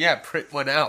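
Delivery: loud yell. Retelling yelling back at a commentator: retelling own yell. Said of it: "too busy yelling".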